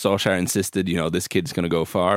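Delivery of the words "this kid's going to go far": plain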